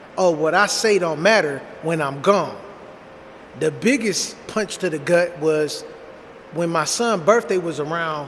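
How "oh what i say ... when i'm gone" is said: ordinary talk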